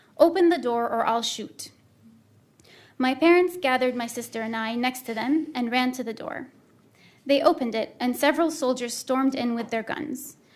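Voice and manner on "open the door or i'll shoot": usual speaking voice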